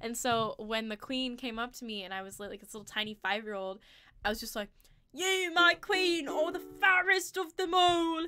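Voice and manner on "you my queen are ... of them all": put-on grand, theatrical British accent, very high-pitched. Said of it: "I also spoke in a British accent".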